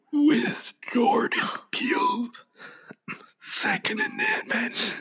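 breathy, unhurried whisper. Reading the critics' consensus aloud, asked to try it: Lupita Nyong'o's Red voice. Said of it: "should I read it like, uh, Lupita?".

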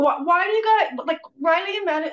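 high-pitched screaming, tripping over words. Retelling a morning scene, screaming at the kids: imitating screaming at kids. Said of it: "I'm screaming at my kids".

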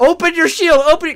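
very high, shrill, very loud screaming. Retelling a friend screaming at the TV: imitating Ian screaming. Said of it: "Ian is screaming at T V".

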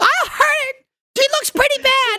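very high put-on woman's voice. Acting out a scene where a dog is threatened: put-on woman's voice. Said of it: "you doing the woman voice".

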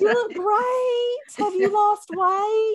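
put-on Texan accent, pitched way up, very high. Describing falling back into it after talking with cousins from Texas, Texas accent. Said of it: "I talked to my cousins from Texas and I am right back".

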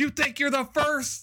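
put-on shrill, very high yell. Describing a favorite trailer moment where a character yells at somebody: imitating someone yelling. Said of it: "And he yells".

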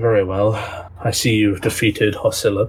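flat, blank, level voice. Waking up tied, the captured bodyguard addresses the party in tiefling bodyguard voice. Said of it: "and her tiefling bodyguard. / He just gives you a sort of blank stare. / and her tiefling bodyguard".

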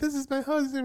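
high, sobbing, crying wail.

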